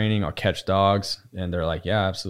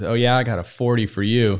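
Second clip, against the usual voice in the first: mock smart-ass, wisecracking tone, higher; 3 semitones higher, 4 dB louder than usual. Retelling his partner's reply to a man threatening them, a smart-ass retort. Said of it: "who's a super smart ass".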